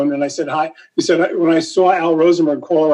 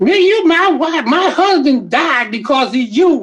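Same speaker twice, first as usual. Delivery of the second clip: put-on grieving, mournful widow voice; 10 semitones higher than usual. Retelling a prank call as a grieving widow: fake Flip Wilson voice. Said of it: "I'm doing my fake, you know, um, Flip Wilson".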